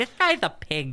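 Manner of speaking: slow, deliberately put-on women's voice. Imitating people at home judging him: imitating women's voice. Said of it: "That's my women's voice".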